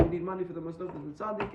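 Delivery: ordinary talk, nothing marked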